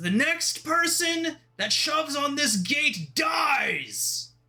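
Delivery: high-pitched, booming, slow, drawn-out commanding bellow. Voicing an armored man at the front gate: loud booming commanding voice. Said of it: "in such a loud, booming, commanding voice".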